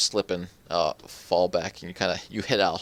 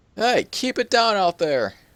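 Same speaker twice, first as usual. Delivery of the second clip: very high, loud hollering yell; 13 semitones higher, 5 dB louder than usual. Voicing someone unseen who hears a commotion: yelling out a window. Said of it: "someone yell out a window".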